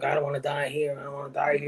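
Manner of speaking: mock frantic panic, said twice. Retelling a movie scene where a guy starts panicking: imitating someone panicking. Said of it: "once he starts panicking".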